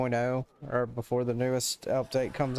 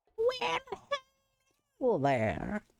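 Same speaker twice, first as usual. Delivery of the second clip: put-on old-lady granny voice, much higher pitch. Repeating a quoted greeting as requested, in a granny voice. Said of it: "He said do it in the granny voice too".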